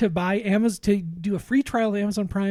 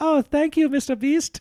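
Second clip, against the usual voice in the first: high, put-on generic European accent; 8 semitones higher than usual. Retelling a woman in a video thanking the host, in a put-on European accent. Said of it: "she has an accent".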